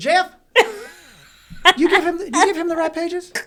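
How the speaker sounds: high, loud calling out. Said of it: "He goes".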